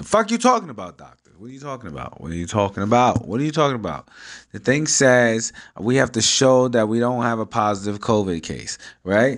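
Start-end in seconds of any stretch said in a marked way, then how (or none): 0.0-4.1 acted, annoyed, exasperated, swooping repeated outburst. Retelling a phone call about a doctor visit: retelling own annoyed outburst. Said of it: "Now I'm getting really annoyed".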